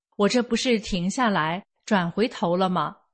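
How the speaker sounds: normal talking voice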